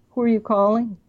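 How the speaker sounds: ordinary delivery, nothing marked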